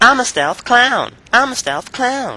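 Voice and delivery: very high, squeaky, clumsy caricature voice. Introducing Infinity Ward's creative strategist, doing a bad Robert Bowling impression. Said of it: "that was probably a really bad impression".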